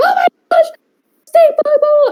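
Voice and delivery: very high, rushed, panicked scream. Retelling the roommate running around screaming about a stink bug: imitating roommate screaming. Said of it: "running around our room screaming 'cause there's a stink bug".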